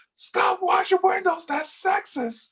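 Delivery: very high, full-lung, top-of-lungs scream. Retelling what Sam screamed at a lady washing a window: imitating Sam screaming. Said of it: "screams at the top of his lung".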